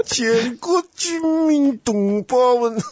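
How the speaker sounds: put-on very high, slow, drawn-out Zhejiang-accented Mandarin. Recalling hearing Chiang Kai-shek speak as a child, Chiang Kai-shek Zhejiang-accented Mandarin. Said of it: "我是小时候听那个蒋中正讲话就是这样".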